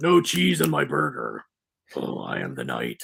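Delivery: put-on low growling voice. Mocking how Batman talked in an earlier film: imitating Bale's Batman growl. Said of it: "that grotesque Bale growl".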